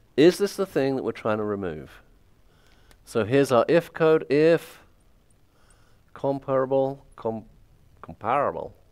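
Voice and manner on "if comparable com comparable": weak, slow, lame put-on American accent. Walking through code, saying a keyword in a best-attempt american accent. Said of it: "That's my best American accent right there".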